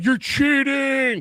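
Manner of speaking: mock, very high-pitched, shrill yell. Retelling how a fan yelled at the officials all game: imitating a fan yelling. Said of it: "Just yelling".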